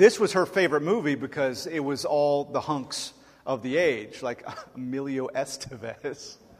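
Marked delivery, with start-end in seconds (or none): 4.2-6.4 stifled laughter pushing through the words. Describing a favorite movie's stars, holding back a laugh. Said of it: "I can't say that without laughing".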